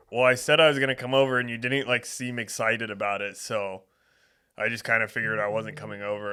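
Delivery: plain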